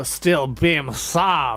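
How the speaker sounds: exaggerated bad fake French accent, drawn out. Pronouncing a list of suggested names, in a bad French accent. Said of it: "I am now trying to pronounce all these in a bad French accent".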